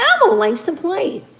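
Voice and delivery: very high-pitched, squeaky voice. While tasting hot food, the speaker tries the voice again: Elmo voice. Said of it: "I don't sound like no Elmo".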